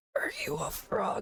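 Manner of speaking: hushed, close, soft, breathy whisper. Game master voicing a woman in the scene asking a player's character, whispering. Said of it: "the woman just whispers".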